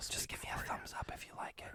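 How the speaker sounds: hushed whisper. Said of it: "why are we whispering?".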